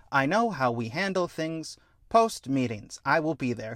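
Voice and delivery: put-on calm robot voice. Retelling a scene where a robot replies to another character, put-on calm robot voice. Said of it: "a calm robot voice go".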